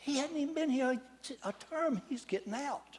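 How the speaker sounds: put-on whispering. Retelling what colleagues said during his speech: imitating people whispering. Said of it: "they're whispering like cra-".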